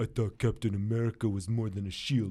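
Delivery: terrible, clumsy put-on French accent. Quoting the only line an MCU actor has said so far: terrible French-accent impersonation. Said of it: "That was a terrible impersonation".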